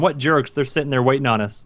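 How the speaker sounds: ordinary talk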